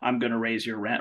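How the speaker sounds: normal talking voice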